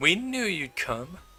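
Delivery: high, hoarse, rasping voice. Narrating a game, voicing the player's aunt addressing her captive: raspy voice. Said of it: "You hear a raspy voice".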